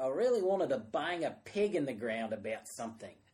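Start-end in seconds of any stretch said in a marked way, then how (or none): 0.0-2.3 loud, terrible put-on Australian accent. Quoting what a man said, speaker uses a terrible Australian accent. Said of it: "this is going to be a terrible Australian accent".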